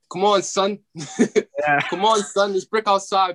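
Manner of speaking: very high, slow New York accent, casual dude. Asked which American accent to do, showing how New Yorkers talk: New York accent.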